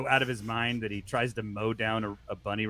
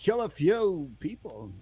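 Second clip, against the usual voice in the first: very slow, halting, pause-heavy delivery, pitched up; 8 semitones higher than usual. Trying out a line from the movie: Christopher Walken voice. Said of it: "I can't do Walken".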